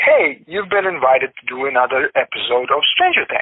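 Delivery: normal talking voice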